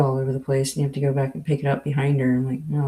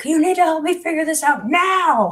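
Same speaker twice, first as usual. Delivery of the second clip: mock shrill, very high, demanding shout; 4 dB louder than usual. Recounting arguing with an ai two hours ago, retelling own yelling. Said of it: "like literally yelling at it".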